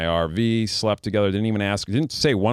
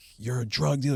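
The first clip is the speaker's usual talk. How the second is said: mock frantic outburst, higher and quieter; 4 semitones higher, 5 dB quieter than usual. Retelling how a girlfriend went crazy accusing him: imitating girlfriend going crazy. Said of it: "she was going crazy on me".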